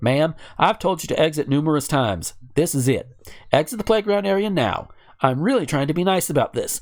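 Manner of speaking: ordinary delivery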